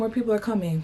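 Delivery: normal talking voice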